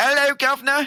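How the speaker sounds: terrible put-on British accent. Showing their own try at a foreign accent would sound as bad, doing a bad British accent. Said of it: "it sounds just as bad".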